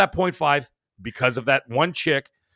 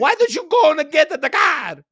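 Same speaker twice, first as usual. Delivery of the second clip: exaggerated Italian accent, much higher, louder; 5 dB louder than usual. Speaker mocks how two characters talked, in a Super Mario-style Italian accent. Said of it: "like Super Mario version of Italian accent".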